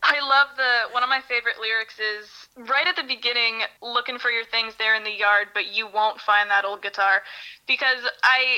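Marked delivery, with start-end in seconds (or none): none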